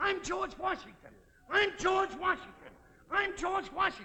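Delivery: shrill, frantic, very high, full-volume yelling. Telling Alice about a man on the bus today: retelling a passenger's yelling. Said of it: "And he's yelling".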